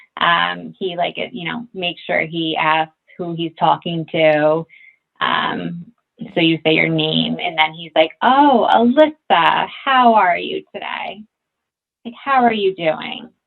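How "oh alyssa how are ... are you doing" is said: mock, very condescending, patronising tone. Retelling how a caller greets her on the phone: imitating a condescending tone. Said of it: "very, like, condescending tone".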